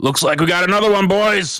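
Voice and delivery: very high, loudly shouted call-out. Narrating a game, voicing a man who notices the sneaking player, yelling out. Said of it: "just yells out".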